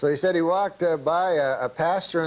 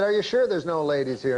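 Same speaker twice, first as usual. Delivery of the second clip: usual speaking voice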